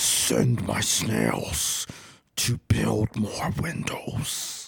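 soft, airy, breathy whisper. Storyteller gives the players the same voice they hear again, booming. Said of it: "that same booming voice again".

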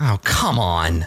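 grumbling under the breath. A character sees two figures step out of a smoking station, muttering under her breath. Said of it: "you hear her under her breath be like".

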